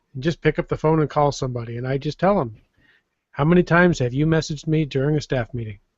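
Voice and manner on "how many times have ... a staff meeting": plain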